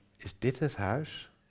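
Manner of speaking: astonished, surprised, high-pitched and drawn out. A woman arriving at the manor with the narrator asks about the house; surprised. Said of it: "zei ze verbaasd".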